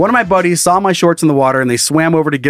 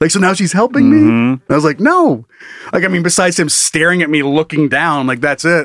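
plain

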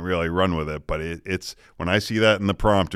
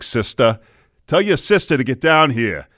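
put-on loud, high, irritated angry Boston accent; 6 semitones higher, 5 dB louder than usual. A parent retells calling the kids when perturbed, in a mock-angry boston accent. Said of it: "when the Boston accent comes out".

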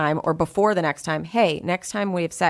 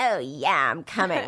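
put-on cat-like voice. Telling friends what you would never say in bed, in your cat voice. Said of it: "that was like your cat voice".

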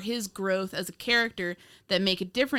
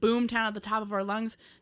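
ordinary delivery

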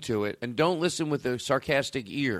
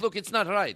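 fake, put-on German accent, pitched up; 6 semitones higher than usual. Doing a bit about Holocaust deniers: put-on German accent. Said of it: "Is that your German guy?".

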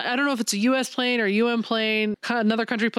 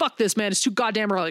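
put-on angry grumble. Retelling a comic scene where Guy Gardner is woken early: imitating an angry Guy Gardner. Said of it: "he's just so angry".

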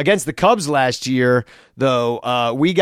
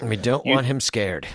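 pretend whispering, quieter; 4 dB quieter than usual. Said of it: "why we're, we're whispering".

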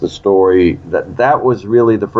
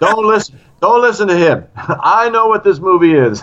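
put-on Russian accent, pitched much higher; 12 semitones higher than usual. Retelling a colleague pulling him aside on the stairwell, imitating Alan's Russian accent. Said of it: "and I sound like a Russian".

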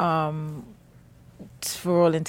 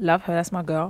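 ordinary talk

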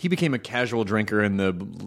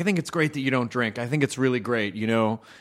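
ordinary talk, nothing marked

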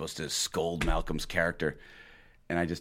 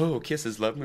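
high, sweet, cooing voice, pitched up; 8 semitones higher than usual. Retelling a scene where an actor pretends to phone his girlfriend: imitating Malcolm McDowell sweet-talking girlfriend. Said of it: "he's just going on and on".

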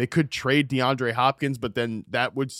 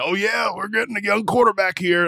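so-so put-on rough voice, pitched up; 8 semitones higher, 4 dB louder than usual. Imitating an owner talking about getting a young quarterback: Jim Irsay impression. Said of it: "That's my Jim Irsay impression".

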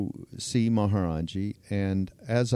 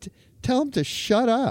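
shrill, stuttering shout at very high pitch; 13 semitones higher than usual. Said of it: "he said".

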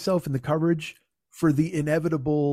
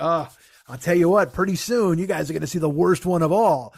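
put-on voice full of glee, teasing; 3 dB louder than usual. Mocking people who hyped an upcoming video, imitating a gleeful voice. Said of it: "You could almost hear the glee in their voice".

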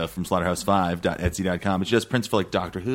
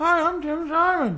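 muffled put-on puppet voice, much higher. Speaking through a puppet so listeners feel he's here: muffled ventriloquist voice as Tim Simon. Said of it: "You muffled your ventriloquist voice".

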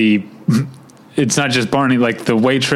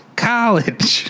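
"college" very high, crow-like Midwestern caw vowel; 9 semitones higher than usual. Owning up to a Midwestern accent, saying a crow-like Midwestern 'college'. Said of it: "my Midwestern accent of saying college. Like a crow".

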